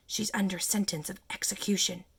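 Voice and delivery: whispered close to the ear. Narrator reading the Rabbit's words, spoken close to Alice's ear, whispering. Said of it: "put his mouth close to her ear, and whispered".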